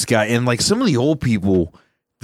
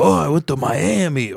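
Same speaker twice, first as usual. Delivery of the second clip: put-on old man voice, words dragged out; 4 semitones higher than usual.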